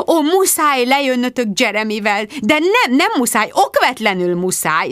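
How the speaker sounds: gushing, bubbling over, effusive. Narrator voicing a woman as she rushes at her friends, gushing, bubbling over. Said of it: "zubogott Rebecca".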